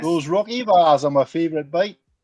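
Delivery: put-on loud, advert-style Geordie Newcastle accent. Imitating the man in an old Rocky Bars advert: Newcastle accent. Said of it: "like, a Newcastle accent".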